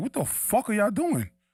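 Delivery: high-pitched screaming. Retelling watching a basketball game on tv: imitating screaming at the tv. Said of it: "I was screaming at the T V".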